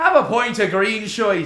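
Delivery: put-on Irish accent. Retelling how he kept going up to people at an Irish bar, in an Irish accent impression. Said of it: "which is my Irish impression".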